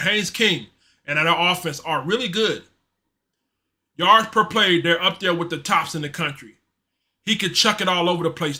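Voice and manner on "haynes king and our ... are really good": ordinary delivery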